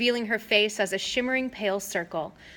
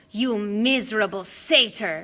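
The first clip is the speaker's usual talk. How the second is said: savage, growled, snarling monster voice. Narrator voicing Medusa after Grover strikes her, snarling at him: Medusa snarling. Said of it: "she snarled".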